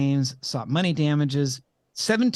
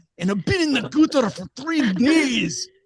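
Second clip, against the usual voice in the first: squeaky, very high, drunken-sounding put-on Scottish brogue; 10 semitones higher, 4 dB louder than usual. Showing how to do a scottish accent: scottish accent. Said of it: "I study my Scottish accent".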